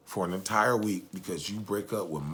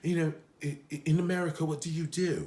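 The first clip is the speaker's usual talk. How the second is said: fake British accent with higher pitch; 8 semitones higher than usual. Retelling how a woman on an episode talked to the gentleman beside her: fake British accent. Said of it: "she talked as though she had a British accent".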